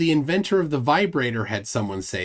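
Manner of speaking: plain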